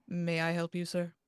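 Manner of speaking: flat, impassive, expressionless delivery. Game master voicing a stiff, formal butler greeting the player, impassive. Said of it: "he looks at you and he says impassively".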